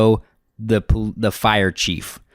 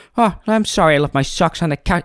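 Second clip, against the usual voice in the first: quick, short choppy bursts, pitched up; 8 semitones higher than usual. Demonstrating how to imitate Bill's speech rhythm: Bill's quick, spit-out delivery. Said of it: "he kind of spits it out like that".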